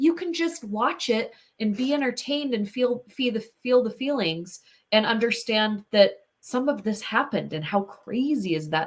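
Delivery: ordinary talk, nothing marked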